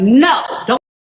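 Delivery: high, loud, put-on pleading yell at full stretch. Telling of his sentencing in court, retelling a yell at him. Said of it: "I'm yelling at him like".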